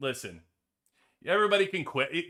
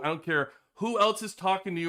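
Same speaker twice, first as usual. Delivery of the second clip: ordinary talk, nothing marked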